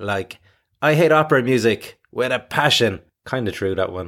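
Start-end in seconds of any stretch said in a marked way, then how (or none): 0.8-3.0 holds a beat, then says "with a passion". Usual phrasing of an example sentence, pause before with a passion. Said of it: "there's usually a pause before you say with a passion".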